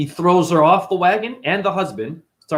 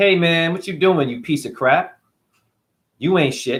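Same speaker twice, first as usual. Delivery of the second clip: put-on arrogant, taunting voice. Retelling a myth where arrogant sons taunt a meditating yogi: imitating arrogant young men. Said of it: "they talk to him like this".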